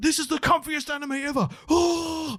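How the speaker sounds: over-the-top hyped trailer voice, high and loud.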